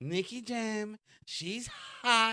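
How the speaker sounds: put-on very slow politician voice, Puerto Rican accent. Retelling what Donald Trump said, doing a Donald Trump impression. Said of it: "He even sound Puerto Rican as Donald Trump".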